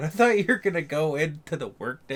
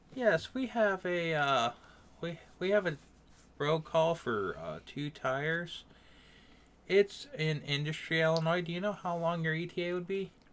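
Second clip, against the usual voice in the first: put-on soft, sweet, nice southern accent; 6 dB quieter than usual. Imitating callers from Mississippi phoning about a road call: imitating a sweet southern accent. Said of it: "they have that southern accent, and they sound really sweet and nice".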